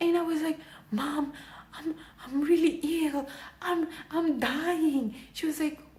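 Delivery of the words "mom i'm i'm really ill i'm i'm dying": put-on tearful crying voice, higher. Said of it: "With tears in my eyes".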